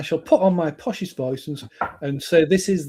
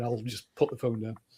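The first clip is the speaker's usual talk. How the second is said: ordinary talk, nothing marked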